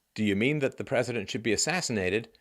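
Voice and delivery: plain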